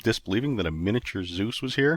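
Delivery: plain reading voice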